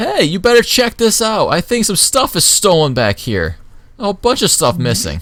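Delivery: very high, loud shouted yell. Narrating a story where a man turns to the alley mouth; yelling. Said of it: "just yells".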